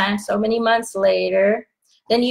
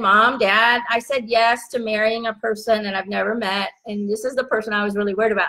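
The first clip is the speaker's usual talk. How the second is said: usual speaking voice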